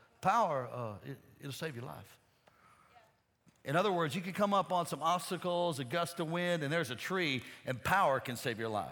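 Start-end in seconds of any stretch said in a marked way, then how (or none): 0.2-2.2 put-on Southern Louisiana accent, dropped low. Quoting a friend's flying advice, imitating Keith Moore's Louisiana accent. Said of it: "he talked like this from Louisiana".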